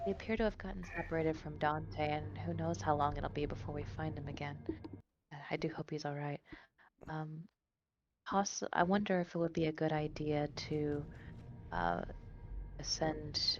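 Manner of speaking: quiet, soft, calm, soothing, hushed voice. Speaking in character to a distressed companion: low, soft, calm voice. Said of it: "in, like, a low voice, but not a, not a whisper".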